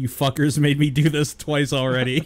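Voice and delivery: put-on, tongue-in-cheek, sarcastic tone, not serious. Explaining what an earlier remark meant: retelling own sarcastic remark. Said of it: "I meant it more sarcastically".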